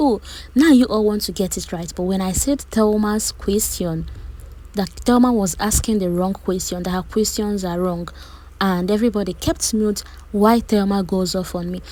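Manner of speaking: ordinary talk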